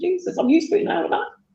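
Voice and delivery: very high, tearful voice, crying through the words. Recalling a son crying in pain in hospital: crying while talking. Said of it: "I don't know why I'm crying".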